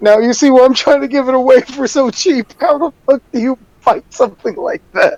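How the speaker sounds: talking through laughter, cracking up. Voicing the shopkeep after the paladin's shield mishap, laughing shopkeeper. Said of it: "the shopkeep just fucking busting out laughing".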